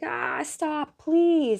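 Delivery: very high, pleading, begging for mercy. Retelling a fight scene where a beaten man begs Batgirl; imitating someone begging. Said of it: "he's like begging her".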